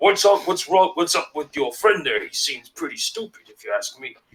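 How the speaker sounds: put-on fantasy orc character voice. Narrating an orc turning back to Tender; orc character voice. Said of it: "he turns back to you".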